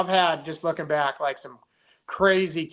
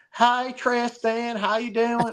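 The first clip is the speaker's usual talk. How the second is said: fake Southern drawl, high and slow; 8 semitones higher than usual. Imitating a woman greeting the speaker, fake southern accent. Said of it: "try to talk Southern".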